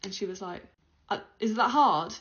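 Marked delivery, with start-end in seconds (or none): 1.1-2.1 mock loud, condescending tone, as if to a child. Retelling an attendant's reply to a request, imitating condescending tone. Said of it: "spoke to me as if I was, like, a child".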